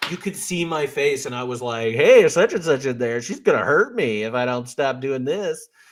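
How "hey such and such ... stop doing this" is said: mock playful, light, very joking kidding-around delivery. Retelling own remark to HR at work: retelling own joking tone. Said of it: "very joking".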